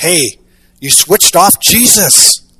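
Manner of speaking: loud, carrying stage whisper, drawn out. Retelling a church play where a shepherd speaks up in the dark: imitating a loud stage whisper. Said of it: "said in a loud stage of whisper".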